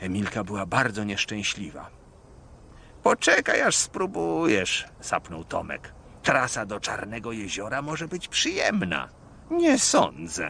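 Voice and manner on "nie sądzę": groaning, much higher pitch. Emilka the engine answering Tomek: groaning. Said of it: "jęknęła Emilka".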